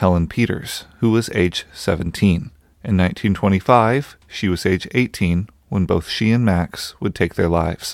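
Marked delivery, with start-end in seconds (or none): 0.0-0.9 spoken in an American accent. Narrating a history, saying a wife's name in an American accent. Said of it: "who I will call in an American accent".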